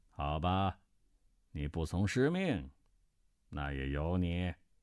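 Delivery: icy, cold sneer, very low. A master answers his disciple, with a cold sneer. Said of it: "石万琛冷笑道".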